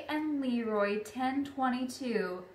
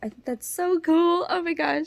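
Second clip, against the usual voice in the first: tearful, emotional gush, high and raised; 5 semitones higher, 5 dB louder than usual. Speaker wrapping up after recommending a woodworker's shop, in tears. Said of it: "I'm like in tears".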